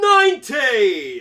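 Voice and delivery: imitated British accent. Mimicking how he calls out a number, in a British accent. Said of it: "he sounds like he has like a British accent. He's like".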